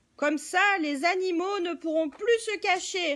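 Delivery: gloating, sneering, snickering storybook villain voice. A man explains why he cuts down the trees, sneering.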